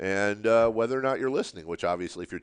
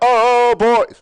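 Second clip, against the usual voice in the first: very loud, very high sudden burst; 14 semitones higher, 15 dB louder than usual. Showing how the mic meter reacts to a louder voice: raised voice. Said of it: "can't raise my voice".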